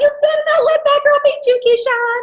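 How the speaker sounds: put-on very high, loud scream. Retelling a race memory, mom in the bleachers: imitating mom screaming. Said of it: "screaming out".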